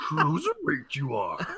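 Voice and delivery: wise little alien master voice. Praising a co-host's impression, then doing one line in Yoda voice. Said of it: "That's a good one".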